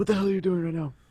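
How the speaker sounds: hushed angry voice. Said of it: "turn around and say".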